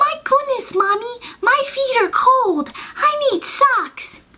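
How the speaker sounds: put-on baby talk, very high and slow. Mocking adults who speak for a baby they're holding, mock baby voice. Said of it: "they talk in the baby voice like they're a baby".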